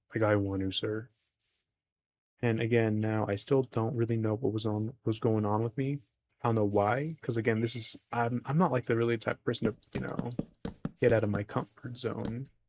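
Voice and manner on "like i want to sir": deep baritone tone. Speaker retells what he once said, in his own deep voice. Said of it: "that's how deep my voice is".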